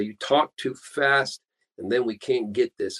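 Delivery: ordinary delivery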